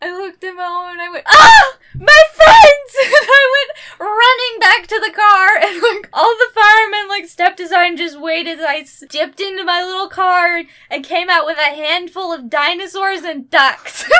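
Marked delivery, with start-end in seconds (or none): 1.3-3.0 shrill, very high, very loud tearful crying shriek. Retelling the moment they looked at mom as firemen worked: retelling a tearful scream. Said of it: "screamed on the verge of tears".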